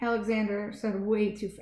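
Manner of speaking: plain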